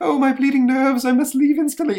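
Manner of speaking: very high, loud, nervous, fussy villain voice. Reading a story aloud and voicing the monster, in a Lost in Space doctor voice. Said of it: "you know who I'm doing the voice of".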